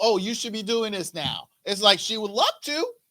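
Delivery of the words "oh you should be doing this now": ordinary delivery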